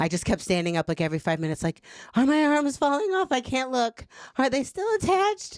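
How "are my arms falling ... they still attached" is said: put-on panicky, paranoid crying whimper, very high. Retelling own words while high at a movie: imitating own paranoid crying. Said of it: "crying and paranoid".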